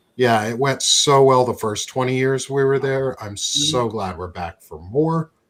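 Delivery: heavy dripping sarcasm, mock-glad. Talking with another speaker about a new war: sarcastic tone. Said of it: "the sarcasm in my voice".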